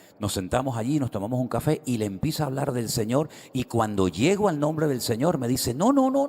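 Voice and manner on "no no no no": shrill, very high-pitched shouting. Retelling how a man refused to hear a name: imitating someone shouting. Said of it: "pero a gritos".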